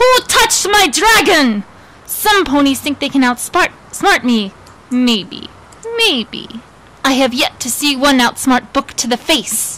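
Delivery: bad, heavy-handed, horrible put-on Russian accent. Performing a comic character bit for an audience: horrible russian accent. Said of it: "my Russian accent is horrible".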